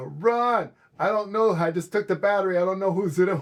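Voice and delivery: put-on screaming. Retelling how a friend yelled after taking a car battery, retelling a scream. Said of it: "and he screams".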